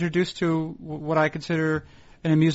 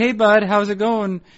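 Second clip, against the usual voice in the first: mock innocent, guileless, casual, friendly tone; 3 semitones higher, 3 dB louder than usual. Retelling how an editor checks on an overdue piece: imitating Paul's innocent tone. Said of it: "he asks you in such an innocent way".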